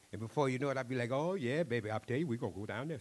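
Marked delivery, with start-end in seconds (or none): 1.1-3.0 put-on thick, heavy, excited Cajun accent. A storyteller recalls getting excited at a school: thick cajun accent. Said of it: "my Cajun accent gets thicker and thicker".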